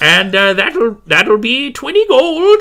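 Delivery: put-on high, loud, grumpy old woman voice. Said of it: "a very grumpy old woman who is named Zuntis".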